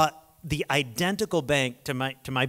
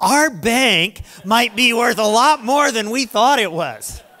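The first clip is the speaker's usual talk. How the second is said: mock shrill, booming, thrilled, very high and loud; 9 semitones higher, 10 dB louder than usual. Retelling his wife's phone call about their bank: retelling excited news. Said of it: "She's all excited".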